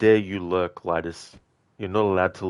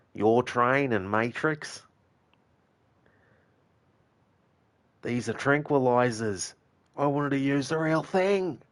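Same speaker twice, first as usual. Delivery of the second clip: put-on thick, heavy Australian accent, pitched up; 6 semitones higher than usual. Acting out the villain from a Commando scene: Bennett's thick Aussie accent. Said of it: "do like the the thick Aussie accent".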